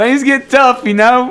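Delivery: talking through laughter. Telling others that things get tough, laughing while talking. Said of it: "I'm laughing".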